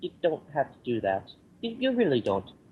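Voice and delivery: meek, timid, self-effacing voice with swooping pitch. Retelling how Martin turned down a website offer: Martin impression. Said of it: "I love your impression of him".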